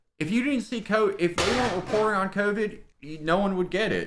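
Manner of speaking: put-on Baltimore-type accent, very high pitched. Imitating a friend with a Delaware Baltimore type accent. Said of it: "she has a, like, a Delaware, Baltimore type accent".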